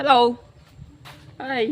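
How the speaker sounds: playful call, high and loud.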